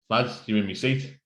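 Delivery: plain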